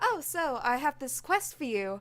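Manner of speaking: put-on keen, eager, young-sounding default voice. Comparing companion voices, imitating the young eager default voice. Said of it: "the young, eager voice is like".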